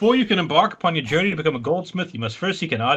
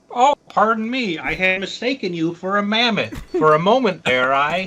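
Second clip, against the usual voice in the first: high puppet frog character voice; 5 semitones higher, 3 dB louder than usual. Playing a character greeting an adventurer, in a Kermit the Frog voice. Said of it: "is there Kermit in this David Lynch?".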